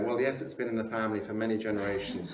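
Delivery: ordinary delivery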